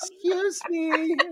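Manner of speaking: small, sweet, very high little voice. Imitating how a woman spoke to him: small sweet little voice. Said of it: "She tried to get all little".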